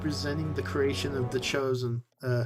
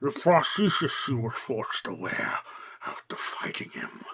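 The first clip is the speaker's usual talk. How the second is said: put-on, mangled voice, as if jawless; 2 semitones lower, 3 dB quieter than usual. Showing how the voice actor talks without a jaw, imitating Plagueis with no jaw. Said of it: "imitate not having a jaw and talking like this".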